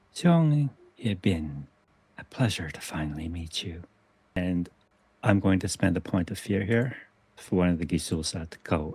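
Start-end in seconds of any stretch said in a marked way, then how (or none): 0.2-3.9 man speaking in a woman's voice. Game master voicing a guard who speaks in a voice not his own, woman's voice from possessed man. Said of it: "speaks in a voice not his own. In fact, it's a woman's voice coming out".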